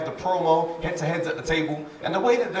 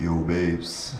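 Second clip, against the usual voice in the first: very deep, very low, bass-heavy put-on voice. Showing the voice for a first phone call: put-on deep bassy voice. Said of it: "there's a right level of bass in my voice for the phone call".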